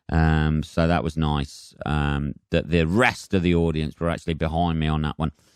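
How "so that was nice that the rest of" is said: usual speaking voice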